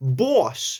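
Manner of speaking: put-on old New York gangster accent. Showing one way to say boss: Bugsy Malone gangster accent. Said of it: "one is like a Bugsy Malone kind of boss".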